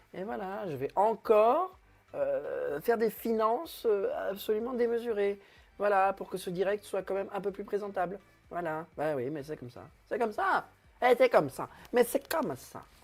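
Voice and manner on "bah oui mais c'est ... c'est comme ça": touch of put-on Italian accent. Hosting a live stream, slight put-on Italian accent. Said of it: "puisque je fais un peu l'accent italien".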